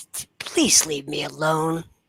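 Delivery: scornful, superior, contemptuous, disdainful voice. Voicing an arrogant patron refusing an offered flagon: disdainful voice. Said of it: "He looks at you with disdain".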